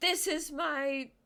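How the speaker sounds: high, loud, slow, drawn-out scream.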